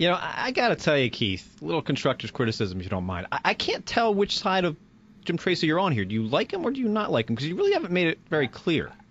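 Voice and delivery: thick, high-pitched sarcastic mock sincerity. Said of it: "that's sarcasm".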